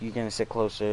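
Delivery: normal talking voice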